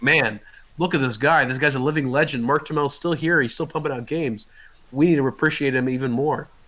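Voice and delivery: ordinary delivery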